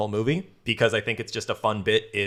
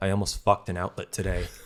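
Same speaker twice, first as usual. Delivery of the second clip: mock-sad monotone, quieter; 3 semitones lower, 3 dB quieter than usual. Quoting what a roommate said on walking in with his date: imitating Ryan's sad monotone. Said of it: "In the most sad, monotone voice".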